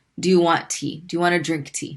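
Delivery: ordinary talk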